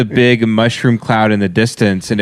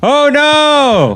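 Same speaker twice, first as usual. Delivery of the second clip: put-on screaming, higher; 3 dB louder than usual. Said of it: "Katie said I've been going like".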